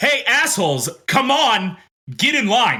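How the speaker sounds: high in-character shout. Voicing a character who stands behind Karen to rally the crowd: in-character shout. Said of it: "I'm gonna stand up behind Karen and shout".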